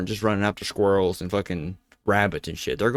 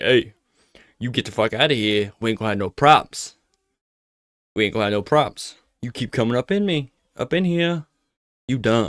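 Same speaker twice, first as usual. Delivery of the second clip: put-on mountain lion voice; 3 semitones higher than usual. Guessing what the mountain lion was thinking, voicing the mountain lion. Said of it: "maybe the mountain lion was like".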